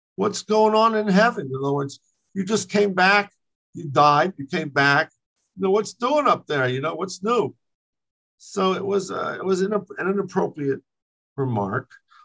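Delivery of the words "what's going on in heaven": mocking tone, much higher. Speaker retells one man mockingly questioning another, retelling a mocking remark. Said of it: "So he says to him mockingly".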